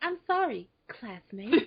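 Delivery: put-on calm, serene, composed tone, smug underneath. Quoting a character's apology to a classmate: imitating a serene apology. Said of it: "The way she said it".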